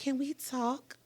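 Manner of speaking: mock meek, timid voice. Retelling a coworker coming into the classroom: imitating someone meek. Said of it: "she comes in all meek and".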